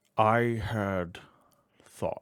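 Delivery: slow grinding granite voice. Voicing a gargoyle musing to himself: slow grinding granite voice. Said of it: "Speaking slowly, voice like grinding granite".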